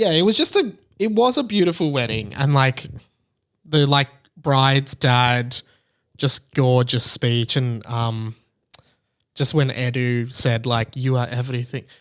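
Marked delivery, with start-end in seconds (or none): 10.9-11.8 put-on Spanish-accented speech. Retelling a wedding speech line: imitating Edu's Spanish voice. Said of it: "in his Spanish voice".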